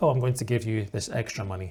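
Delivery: ordinary talk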